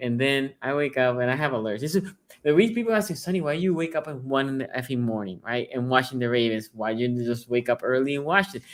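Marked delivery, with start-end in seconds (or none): none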